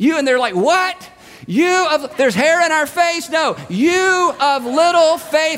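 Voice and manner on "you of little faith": mock long, loud, drawn-out carrying yell. Retelling Jesus calling out to the panicked people in the boat: retelling a yell. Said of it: "He's having to yell this".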